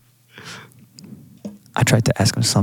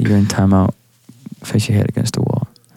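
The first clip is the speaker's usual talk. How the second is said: plain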